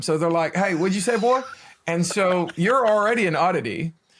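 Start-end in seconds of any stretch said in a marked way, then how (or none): 0.5-1.4 put-on local American accent, pitched up. Recalling first arriving in the States, imitating how locals talked. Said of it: "they're they're talking like this all the time".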